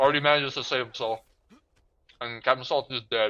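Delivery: talking with mouth full, chewing. Commentating a game while really hungry, talking while chewing. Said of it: "Sorry for chewing and shit".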